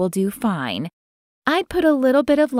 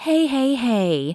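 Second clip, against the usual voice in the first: gentle, calm, soothing voice; 4 semitones higher than usual. One woman calms another, panicked woman about bathing a baby, in a soothing voice. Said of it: "Leslie said in a soothing voice".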